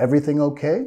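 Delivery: pitch lifts at the end on okay. English lesson for spanish speakers on questions, rising pitch on final okay. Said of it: "queremos subir de entonación al final de la pregunta".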